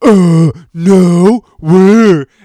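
very loud, shrill, shoddy put-on voice. Retelling a made-up video conversation about gigs: shitty impression of Drew. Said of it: "I just did this shitty impression of".

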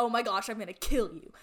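acted upset voice. Retelling their reaction to the video: imitating own upset reaction. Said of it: "I was so upset".

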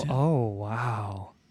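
fake sarcastic astonishment. Teasing the other speaker about a favorite player: sarcastic mock surprise. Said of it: "I'm being sarcastic".

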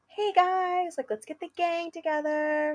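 high, bubbly voice. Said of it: "you're such a bubbly person".

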